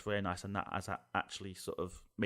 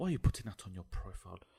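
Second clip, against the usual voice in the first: put-on judging, disapproving character voice. Imagining how people viewing your profile would sound: imagined viewer's voice. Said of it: "this is my points of view voice. This is how I would imagine they would sound".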